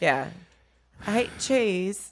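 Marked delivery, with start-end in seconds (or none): 1.1-2.1 pitched-up, poorly done put-on British accent. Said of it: "British. She likes to talk British".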